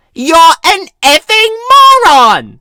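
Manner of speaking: very loud, very high, furious screaming shout. Reading a store story aloud, a customer yells at the narrator: shouting angrily. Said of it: "Douchebagette shouted into my face".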